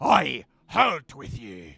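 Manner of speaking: very loud, booming, authoritative bellow, swooping. Narrating the scene, a voice on the ship calls out to the newcomers: commanding voice. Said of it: "you hear a commanding voice that says".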